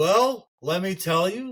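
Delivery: put-on Yiddish-inflected accent.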